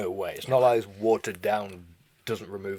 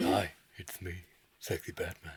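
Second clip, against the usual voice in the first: soft, hushed, breathy, mock-seductive voice; 2 semitones lower, 7 dB quieter than usual. Trying to recall a clip the other speaker mentioned, mock-seductive Sexy Batman voice. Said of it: "It sounded like that sexy Batman thing".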